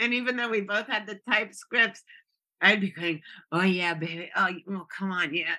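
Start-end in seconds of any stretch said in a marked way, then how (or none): 3.5-5.5 put-on sultry voice, trying hard to sound sexy. Retelling reading scripted segments with a partner, in a mock sexy voice. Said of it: "trying to sound all sexy".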